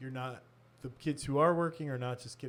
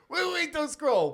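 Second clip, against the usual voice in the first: put-on cracking, screechy high teenage kid voice; 8 dB louder than usual. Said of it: "his voice is cracky and high-pitched and screechy".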